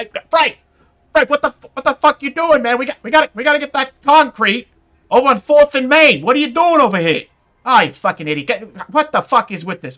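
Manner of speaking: put-on shrill, very loud, high New Jersey accent yelling. A construction boss with a clipboard yells at Frank, yelling Jersey construction boss. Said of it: "you know he's yelling".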